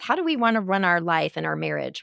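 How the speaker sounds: ordinary delivery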